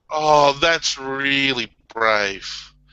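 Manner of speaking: patronizing, condescending, falsely admiring tone. Responding to a comedian's story about getting his limp, patronizing. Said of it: "don't use that patronizing tone with me".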